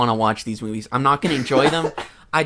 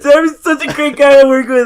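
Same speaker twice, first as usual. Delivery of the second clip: fake sobbing, higher and louder; 11 semitones higher, 11 dB louder than usual. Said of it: "are you almost cried out?".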